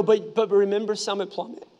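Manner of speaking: ordinary talk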